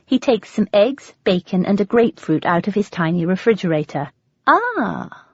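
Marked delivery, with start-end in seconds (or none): 4.4-5.0 very slow, swooping, put-on English accent. Narrator reads Jack offering breakfast to someone just awake, in an English accent. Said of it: "Jack says in an English accent".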